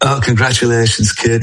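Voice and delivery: put-on sniffly speech, sniffing between words. Retelling meeting a hero who congratulates the speaker: Alex Higgins impression. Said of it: "the way he used to speak".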